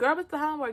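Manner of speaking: high put-on voice. Retelling what a guy asked, speaker does his voice: high-pitched imitation voice. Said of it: "I'm just gonna do his voice".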